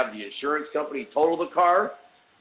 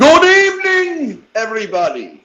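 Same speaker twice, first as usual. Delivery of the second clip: high, loud, booming, swooping vampire voice; 10 semitones higher, 11 dB louder than usual. Letting himself in and greeting everybody in a Dracula voice. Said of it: "he sounds like Dracula".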